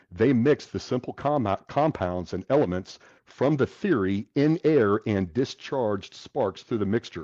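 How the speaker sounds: ordinary delivery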